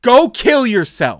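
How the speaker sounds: screaming. Retelling what a customer yelled at a coworker: imitating someone screaming. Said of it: "he looks at her and just screams".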